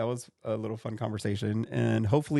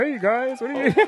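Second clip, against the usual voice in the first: very high-pitched, loud puppet frog voice; 13 semitones higher, 6 dB louder than usual. Explaining a slang term to co-hosts, doing the voice: Kermit puppet voice. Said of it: "The voice and everything".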